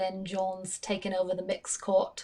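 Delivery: attempted Australian accent that drifts into English. Trying a line in an australian accent, attempted australian accent. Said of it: "That was more like English".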